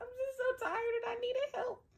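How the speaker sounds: put-on teary sobbing, very high-pitched crying voice. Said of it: "I burst into tears".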